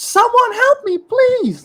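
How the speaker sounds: mock terrified scream. Retelling hearing a girl in the hallway, imitating a terrified scream. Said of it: "a girl's voice just come out and screaming".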